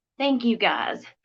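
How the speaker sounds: crying while talking. Thanking viewers after urging them to seek help with drugs, crying while talking. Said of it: "I'm sorry for crying up here".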